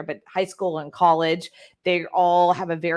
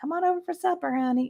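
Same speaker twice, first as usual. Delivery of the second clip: put-on, very high, broad Southern accent; 12 semitones higher, 4 dB quieter than usual. Describing the speaker's very Southern family: imitating a Southern accent. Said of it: "very Southern".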